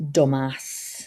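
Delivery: plain northern Yorkshire pronunciation. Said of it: "she talks like that 'cause she's from Yorkshire".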